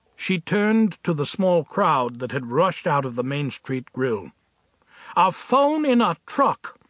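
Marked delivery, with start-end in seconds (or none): 5.2-6.7 slow, high-pitched, disgusted and scornful. Winnie turns to the small crowd after a truck nearly ran a man down: disgusted. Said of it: "she said with disgust".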